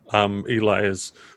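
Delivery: ordinary talk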